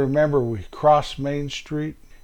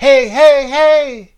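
mock yell, pitched higher and louder; 8 semitones higher, 4 dB louder than usual. Speaker retells a scare where older strangers shouted at the group while crossing a river; imitating a yell. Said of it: "they were running at us yelling".

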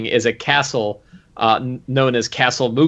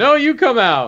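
mock, very high, shouted taunting voice; 11 semitones higher than usual. Retelling two groups yelling through a tunnel: imitating yelling through a tunnel. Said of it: "yelling through a tunnel".

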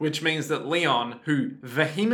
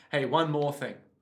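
plain

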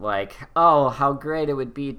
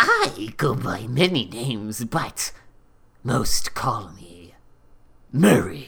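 put-on, bad, drawn-out, slow creature voice. Retelling a movie scene, quoting the eel Murray: bad Murray impression. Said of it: "that's not a good impr-".

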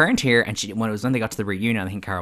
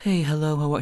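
relaxed, soothing, pleasant, slightly high-pitched voice; 6 semitones higher than usual. Describing a reality star's voice to another speaker: soothing Dina Manzo voice. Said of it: "she's a very soothing voice".

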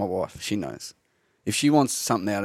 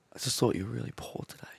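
very soft, barely audible hushed whisper; 10 dB quieter than usual. Asked for an impression of the coach Colo: Colo impersonation, real soft. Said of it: "do you have a Colo impersonation".

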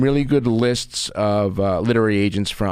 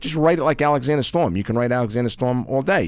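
plain

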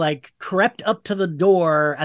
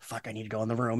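very quiet, frightened, hushed muttering; 6 semitones lower, 14 dB quieter than usual. Retelling deciding to enter the cold room: imitating own scared voice. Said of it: "And I was so scared".

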